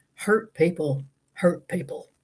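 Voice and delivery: slow, unhurried Southern US drawl. Retelling what a podcast guest said: imitating Santa Claus's Southern accent. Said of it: "his Southern accent".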